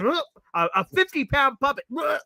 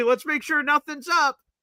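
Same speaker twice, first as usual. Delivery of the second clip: mocking, sarcastic tone; 2 semitones higher than usual. Recalling his live broadcast reaction to a penalty, retelling a sarcastic remark.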